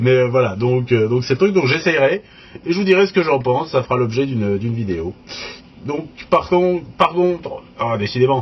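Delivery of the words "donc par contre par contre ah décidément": fumbling, tripping over phrases, repeated words. A presenter talking through equipment in a video, stumbling over words. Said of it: "je bafouille un petit peu aujourd'hui".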